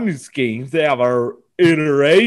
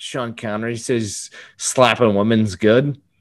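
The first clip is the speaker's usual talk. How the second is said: ordinary delivery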